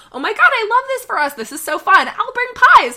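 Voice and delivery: put-on gushing excitement. Retelling what a woman said; imitating her gushing excitement. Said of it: "She's like".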